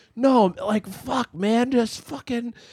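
put-on very high, slow, drunk pleading voice. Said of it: "really, really drunk".

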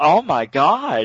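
put-on Yiddish accent, bursting out.

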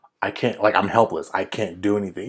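normal talking voice

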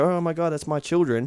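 plain

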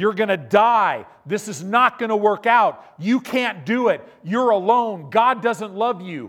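very loud, relentless, high-pitched roaring voice. Speaker acts out the thoughts that roar in your mind, acting out a roaring voice. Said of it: "it's a roar in your mind".

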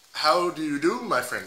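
botched South African accent veering into Indian accent. Speaker attempting a favorite Afrikaans sentence, bad South African accent. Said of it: "that's more Indian than".

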